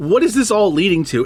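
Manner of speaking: usual speaking voice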